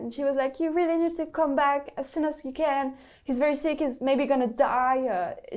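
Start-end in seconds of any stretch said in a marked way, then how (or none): 0.6-5.0 play-acted, loud, intense screaming. Retelling a friend's fake emergency phone call: imitating a friend screaming. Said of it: "she was screaming at the phone".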